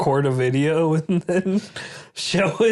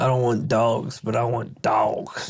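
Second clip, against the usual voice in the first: put-on country accent; 5 semitones lower than usual. Quoting a man he built something for, in a put-on country accent. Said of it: "He didn't sound country like that".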